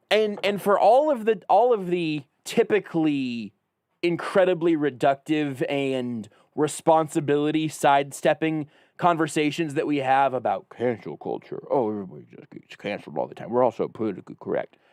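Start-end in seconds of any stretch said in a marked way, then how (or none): 10.7-14.7 strange put-on whispery voice, quick and breathy. Parodying typical complaints about cancel culture: odd put-on voice. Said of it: "I don't know what that voice is".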